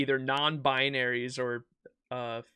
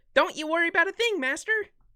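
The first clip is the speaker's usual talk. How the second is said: scratchy put-on anime voice, much higher, louder; 5 dB louder than usual. Trying Astolfo's famous dub scene, speaking to the master: Astolfo voice. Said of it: "He has such a scratchy voice".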